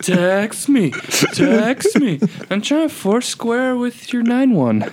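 stretched out and very high. Teasing another speaker about social media, then imitating: Drunk Uncle voice. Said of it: "You sound like drunk uncle".

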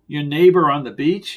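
ordinary delivery, nothing marked

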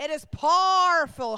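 Northern Irish accent. Reading a psalm aloud and showing how a line should be said: Ulster accent. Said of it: "Has to be said with an Ulster accent".

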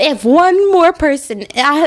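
finally losing it. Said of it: "he got up off the couch and he was like".

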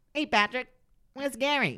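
shrill, nasal, very high, loud cartoon voice. Trying again after being teased, doing SpongeBob voice. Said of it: "I'll try and do SpongeBob".

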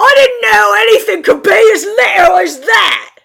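very loud, high-pitched fantasy orc voice. Voicing orcs reacting to a commotion outside: orc voice. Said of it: "and all the orcs saying".

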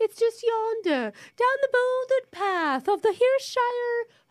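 high, slow, exaggerated fake posh English accent. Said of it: "You're both English sounding".

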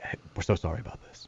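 breathy, very hushed, very quiet whispered talk. Retelling what the producers said when they called: imitating NPR whisper talk. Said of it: "you have to whisper talk if you're on N P R".

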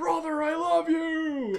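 very high, stretched-out holler. Recalling running into the cornfield, calling to his brother, retelling a yell. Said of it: "And yelled".

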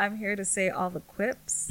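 plain

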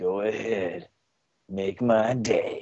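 mock-seductive, sultry put-on voice. Asked to show a phone voice, doing a porn voice instead. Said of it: "not your porn voice".

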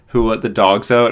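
usual speaking voice

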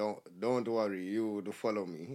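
slow, broken non-native English. Speaker quotes what a man told him at his leaving drinks, imitating broken english. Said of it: "he said to me in his broken English".

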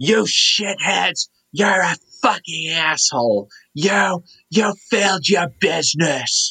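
put-on high, slow yell with a Long Island accent. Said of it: "that Long Island thing where he yells like".

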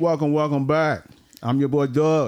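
talking through a mouthful of food, chewing through words. Opening a podcast episode, greeting listeners while talking with chips in mouth. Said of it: "I got chips in my mouth".

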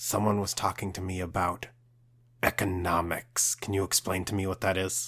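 speaking in a hushed whisper. A player's character asks Bronte a question aside, whispering. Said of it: "I kind of lean in and whisper".

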